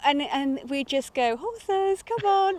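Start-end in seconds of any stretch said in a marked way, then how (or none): 1.4-2.6 loud, high far-carrying call. Showing how horses are called in: imitating a loud horse call. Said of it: "but in a really loud voice".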